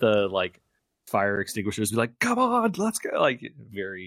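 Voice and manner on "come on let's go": high-pitched, urgent yelling. Retelling a driver yelling at people with fire extinguishers: imitating someone yelling. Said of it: "yelling at the people".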